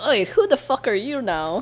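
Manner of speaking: accusing, confrontational, swooping challenging tone. Demonstrating the accusatory way to ask someone who they are, accusatory. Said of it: "the accusatory way of like saying".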